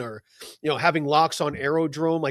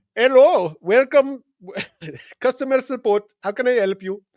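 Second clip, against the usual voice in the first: put-on Indian accent, high, bright and loud; 8 semitones higher, 7 dB louder than usual. Prompted to use an Indian voice, the speaker answers in a put-on Indian accent. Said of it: "use your Indian voice".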